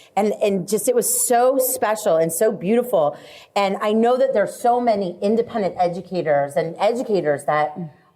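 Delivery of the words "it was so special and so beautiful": ordinary delivery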